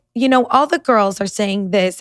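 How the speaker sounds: ordinary delivery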